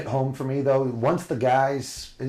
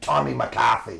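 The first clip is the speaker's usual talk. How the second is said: Boston-accented pronunciation. Saying a man's real name the way locals really say it, Boston accent. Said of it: "want to bring that accent".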